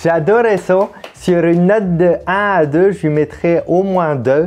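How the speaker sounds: high, slow, mock bad Québécois accent. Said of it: "quand quelqu'un imite, euh, l'accent québécois".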